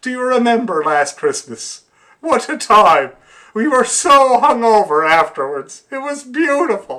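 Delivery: put-on deeply sad, very high-pitched, loud moan. Retelling the clip's ending where the character turns sad: imitating someone very sad. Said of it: "he's very sad".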